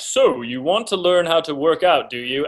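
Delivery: all-knowing, omniscient cartoon narrator voice. Recalling a workout cartoon's narrator addressing the viewer: omniscient narrator voice. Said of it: "that omniscient voice".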